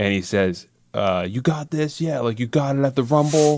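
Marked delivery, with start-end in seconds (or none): 1.3-3.6 high-pitched mocking yell. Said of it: "he's yelling at Sami".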